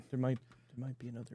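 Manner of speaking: very soft, barely audible half-whisper close to mic. Speaking into a mic while others can all hear, half-whispering. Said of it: "Why are you whispering into a mic?".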